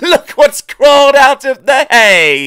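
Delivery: shrill, very high, loud chortling. An engine speaks to another engine that just drew alongside, chortling. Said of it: "he chortled".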